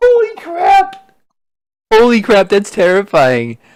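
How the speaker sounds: high, loud terrified cry.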